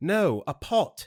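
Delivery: put-on high, slow, loud, thick British accent. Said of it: "with a thick British accent".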